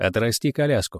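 ordinary delivery

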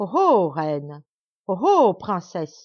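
booming, menacing, slow, very loud cry. Narrator reads the desert fairy addressing a queen and princess: crying out. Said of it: "s'écria-t-elle".

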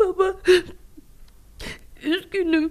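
sobbing, crying through the words in a tearful voice. A daughter, asked by her father why she is crying at midnight, answers crying. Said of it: "Gece yarısı niçin ağlıyorsun?".

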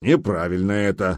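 in a grumbling voice. A man objects to an order to let a captive go, grumbling. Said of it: "проворчал Гудмунд".

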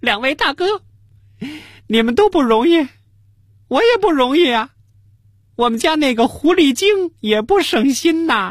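high-pitched, aggrieved, tearful whining voice. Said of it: "特委屈地说".

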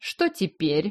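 snide, sarcastic delivery. Narrator reading a man's question to the narrator, asked sarcastically. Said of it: "спросил у меня язвительно".

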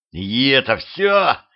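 put-on wheezing. Petrovich, clinging to the werewolf's neck and striking its muzzle: wheezing. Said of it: "прохрипел Петрович".

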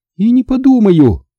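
firm, very high-pitched, resolute outcry. A woman answers the narrator's instructions, shouting resolutely. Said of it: "решительно выкрикнула она".

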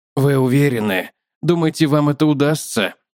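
ordinary delivery

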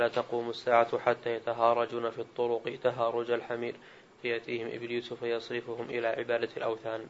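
ordinary delivery

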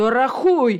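commanding voice. Mr. Corner orders his sobbing wife to count, commanding. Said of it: "скомандував він".

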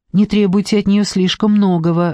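ordinary delivery, nothing marked

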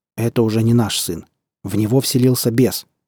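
usual speaking voice

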